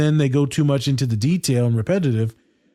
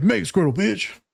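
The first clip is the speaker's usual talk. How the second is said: mocking put-on street voice, pitched higher; 6 semitones higher than usual.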